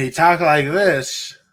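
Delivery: loud, horrible, put-on Southern accent. Joking about a player while answering a question: horrible Southern accent. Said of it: "That's a horrible Southern accent".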